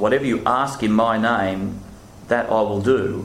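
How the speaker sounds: normal talking voice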